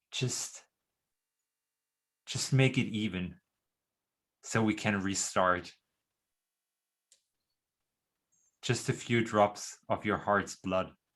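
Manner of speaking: close, intimate, seductive whisper. Voicing a vampire leaning in to a player's character: whispering into her ear. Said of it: "and whispering, uh, into your ear".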